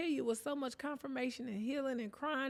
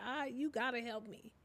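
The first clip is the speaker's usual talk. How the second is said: mock tearful, crying voice, quieter; 4 dB quieter than usual. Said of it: "just crying like".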